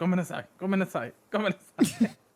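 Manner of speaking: put-on yelling. Telling a story, speaker acts out a mad man yelling back at the wall. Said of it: "he starts like yelling back at the wall".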